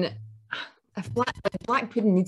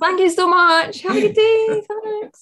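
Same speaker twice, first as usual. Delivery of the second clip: mock gushing, sugary super-nice voice, pitched very high; 12 semitones higher, 3 dB louder than usual. Retelling what she said when the woman came back, in a put-on super-nice tone. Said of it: "I had to be like super, super nice".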